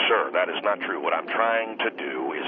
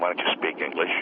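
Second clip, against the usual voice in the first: ordinary delivery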